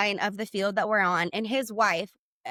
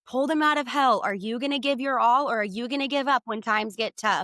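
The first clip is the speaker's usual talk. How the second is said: hectoring yell, pressing hard; 2 semitones higher than usual. Recounting what a man said while yelling in the speaker's face, retelling a yell. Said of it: "he is yelling in my face".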